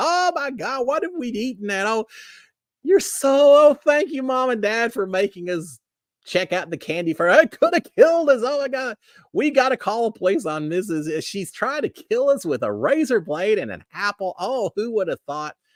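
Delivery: panicked, high, frantic babbling rant. Retelling finding a razor blade in an apple: retelling kids' panicked meltdown. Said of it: "we're having a meltdown".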